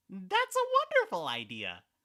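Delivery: very high, loud, swooping character voice, big pitch swings. Speaker shows off a favorite character voice, doing Flowey voice. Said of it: "like Flowey".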